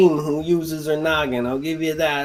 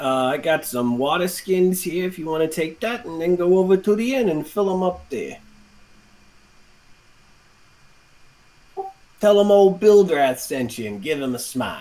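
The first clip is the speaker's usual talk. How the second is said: put-on salesman-style voice with New Jersey accent. The speaker voices salesman Bildrath to another player; Bildrath's Jersey accent. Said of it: "this salesman has a Jersey accent".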